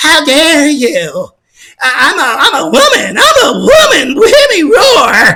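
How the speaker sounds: swooping put-on feminine voice. Speaker demonstrates a voice for someone to copy, in a female-ish voice. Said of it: "Can you sound like this?".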